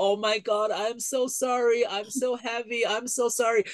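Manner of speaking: very high, drawn-out, slow, tearful sobbing. Retelling apologizing to the donkey while riding it: retelling own crying. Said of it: "I was crying while I was h-, riding the donkey".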